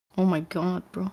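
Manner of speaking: talking through laughter. Reacting when the other speaker doesn't know who Anomaly is: laughing while talking. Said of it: "Why are you laughing?".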